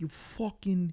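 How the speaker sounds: put-on British accent leaking through. Mocking an actor playing an American, mimicking his British accent. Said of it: "he still had the British accent".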